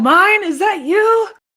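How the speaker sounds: loud, high-pitched, drawn-out calling-out yell. Player voicing their character in a game, yelling out. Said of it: "I'm just gonna yell out".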